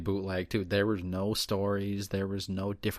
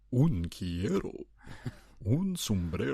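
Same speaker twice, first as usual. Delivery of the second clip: put-on caricatured old grandpa voice; 2 semitones higher than usual. Mocking the spanish one as stereotypical; old grandpa with big mustache. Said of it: "like the fucking grandpa with the big mustache".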